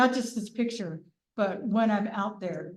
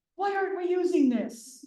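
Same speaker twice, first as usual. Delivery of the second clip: very high, blurted yell; 9 semitones higher than usual. Retelling a man yelling a question while looking at the toolie: imitating someone yelling. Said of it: "he just kinda yelled out loud".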